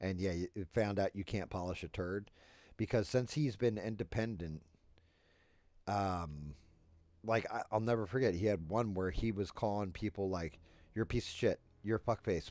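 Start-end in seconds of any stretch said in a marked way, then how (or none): 10.9-12.5 put-on childlike voice, like a kid. Retelling someone's insults, imitating Don Lemon cursing like a little kid. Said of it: "saying it like a little kid who just found out".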